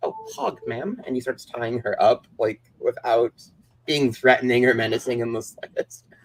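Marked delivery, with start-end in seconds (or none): 0.0-1.0 mock very high, soft, mild, courteous voice. Retelling a movie scene, quoting the man as he ties the girl up, very polite. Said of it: "he's just like very polite".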